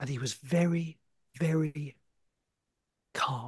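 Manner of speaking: whispered commentary style. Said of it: "to talk like this".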